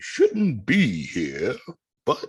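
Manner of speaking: nature-documentary narration with swooping, sweeping pitch. Imitating an animal documentary narrator: David Attenborough voice. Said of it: "That's him".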